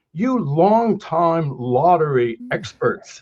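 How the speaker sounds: very slow, drawn-out, put-on British accent. Retelling what a BBC reporter said, imitating a British accent. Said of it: "you love to do the British accent".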